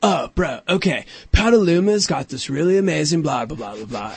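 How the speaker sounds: laid-back surfer-dude voice. Retelling someone's recommendation, the speaker slips into a Crush voice. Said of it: "You sound like Crush".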